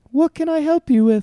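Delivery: very high, polite phone-assistant voice. Trying their best Siri impression after mentioning a viral Twitter clip: Siri impression. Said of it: "try to do your best Siri impression".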